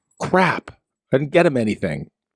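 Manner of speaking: ordinary talk, nothing marked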